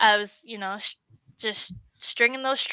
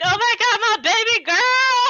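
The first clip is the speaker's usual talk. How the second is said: put-on shrieking, crying scream, very high, tearful; 12 semitones higher, 4 dB louder than usual. Recalling her first three hundred sanctioned, imitating mom screaming and crying. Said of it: "my mom is screaming, crying".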